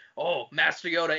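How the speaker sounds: very low, deep, soldierly voice. Describing clones in Jedi robes greeting Yoda and Obi-Wan, in Jango Fett voice. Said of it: "in totally fucking Jango Fett's voice".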